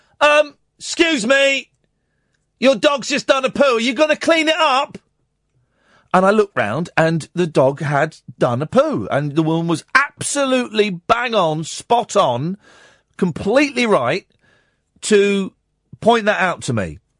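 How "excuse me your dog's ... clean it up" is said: mock woman's voice, high shout from a distance. Retelling a woman on a swing calling out from far away: imitating a woman shouting. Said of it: "this woman started shouting".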